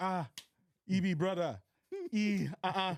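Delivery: put-on Nigerian accent. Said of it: "you go in there and you're like".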